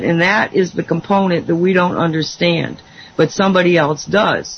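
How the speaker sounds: normal talking voice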